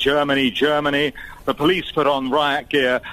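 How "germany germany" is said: ordinary talk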